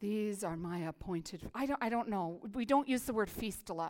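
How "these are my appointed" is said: formal scripture-reading voice, lower and quieter. Showing how people read scripture aloud: King James voice. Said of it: "we read it in a King James voice".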